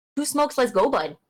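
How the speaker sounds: fake Canadian accent, played for laughs. Showing accents on request, here a put-on Canadian accent. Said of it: "That's the Canadian".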